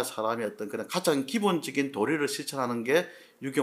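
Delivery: ordinary talk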